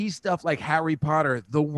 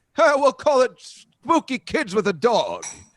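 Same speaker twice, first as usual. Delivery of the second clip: very high, loud, slow, swooping comic voice; 10 semitones higher, 6 dB louder than usual. Retelling a cartoon voice role as a movie producer: Rodney Dangerfield voice. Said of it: "I was doing the Rodney Dangerfield joke".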